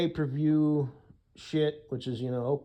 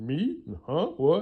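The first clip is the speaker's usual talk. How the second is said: put-on voice of a sixteen-year-old boy; 4 semitones higher than usual. Retelling a short video's exchange, imitating a sixteen-year-old-sounding voice. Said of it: "an anonymous voice who sounded like he was sixteen years old".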